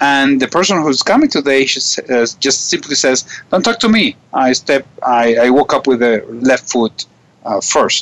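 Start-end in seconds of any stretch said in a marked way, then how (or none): none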